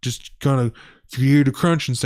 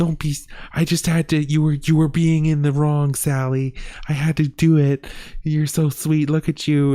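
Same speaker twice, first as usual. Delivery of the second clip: put-on voice for talking to a pet; 2 semitones higher than usual. Retelling how a man soothes a bear: imitating talking to a pet. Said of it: "he talks to them like they're fucking, like, dogs".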